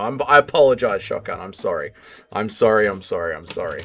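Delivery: very quiet, deep, low, hushed, emotional murmur. A streamer apologizing over and over to a chat member, getting emotional. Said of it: "We're getting emotional".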